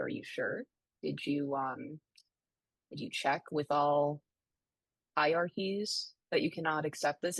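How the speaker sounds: put-on overly courteous, sweet, polite nice-girl voice. Retelling pleading with clerks about a torn birth certificate: imitating own nice girl voice. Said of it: "I'm using my nice girl voice".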